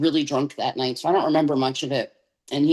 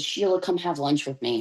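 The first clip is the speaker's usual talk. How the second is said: gentle, kind, softly spoken voice; 4 dB quieter than usual. Retelling how the helper invited her to lunch: imitating a kind, soft voice. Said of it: "very kindly and softly said".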